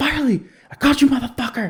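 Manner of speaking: put-on very high, wild hysterical yell. Retelling his dad finally catching a rat in the house, imitating dad's hysterical yell. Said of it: "he's just like hysterical".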